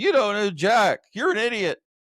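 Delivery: sarcastic game-show host voice. Recalling a computer trivia game mocking wrong answers, imitating the sarcastic You Don't Know Jack host. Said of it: "this guy got on there real sarcastic going".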